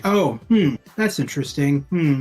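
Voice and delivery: put-on bored, indifferent, unbelieving, uninterested tone. Imitating a show host's responses to the actors: imitating a monotone host. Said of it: "very, like, monotone".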